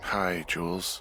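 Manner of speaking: drowsy, tired, just-woken sleepy voice. Told to get out of bed for a radio call, a character greets the caller, tired. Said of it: "you sound tired".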